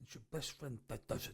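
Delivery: thick, hushed, barely whispered, laid on thick. Repeating a movie line just heard: thick Pacino impression. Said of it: "Very, very, very thick".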